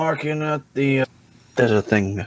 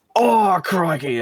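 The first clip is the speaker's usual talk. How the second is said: put-on Australian-accented exclamation on crikey; 4 semitones higher than usual. Reacting to spotting a caterpillar on a barrel: Australian accent. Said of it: "I don't know why I'm talking like this now".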